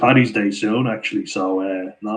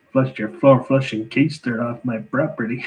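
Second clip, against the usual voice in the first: put-on Chicago accent, shown off; 3 semitones higher than usual. Reading chat comments and doing a Chicago accent: Chicago accent. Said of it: "So that's a good accent as well".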